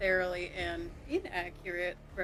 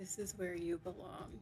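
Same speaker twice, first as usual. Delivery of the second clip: very quiet, hushed, soft voice; 2 semitones lower, 9 dB quieter than usual. She looks down at the fallen foe lying at her feet, speaking very quietly. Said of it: "she says very quietly".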